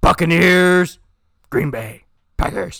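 loud, booming put-on character voice. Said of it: "It's my Batman voice".

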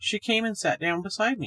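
plain reading voice

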